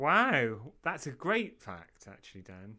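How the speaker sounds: insincere-sounding, falsely admiring tone. Praising the other speaker's fact, sounding insincere. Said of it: "that sounded quite insincere".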